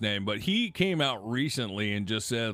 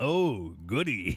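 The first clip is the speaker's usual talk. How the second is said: creepy, talking-down voice. Acting out the president talking creepily to an eight-year-old: imitating Trump talking to a child. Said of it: "Creepy as hell talking to an eight-year-old like that".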